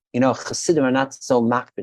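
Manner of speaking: normal talking voice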